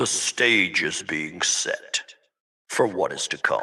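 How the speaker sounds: hushed, soft, ominous, sinister sci-fi villain voice. Redoing someone's announcement the way it should sound: Darth Vader voice. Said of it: "That's my best Darth Vader voice".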